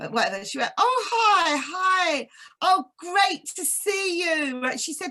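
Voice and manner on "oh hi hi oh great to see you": very slow, high, put-on American accent. Retelling a greeting from the woman's friend: imitating an American accent. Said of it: "I think she had an American accent".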